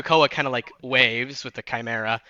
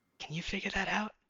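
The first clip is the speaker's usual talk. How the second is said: high, very soft, hushed half-whisper, barely audible; 8 semitones higher, 13 dB quieter than usual. Narrating a game, voicing a character who half-whispers to the Chimera: half-whispering. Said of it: "he like whispers to the Chimera".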